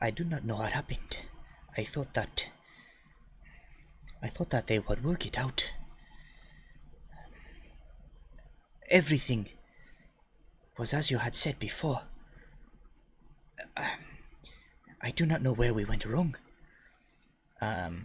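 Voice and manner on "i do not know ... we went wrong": rushed, hushed muttering under the breath. Voicing a character speaking to companions: hurried, under her breath. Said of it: "hurriedly under her breath".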